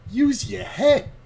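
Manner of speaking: high, slow, smug. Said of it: "he's just like".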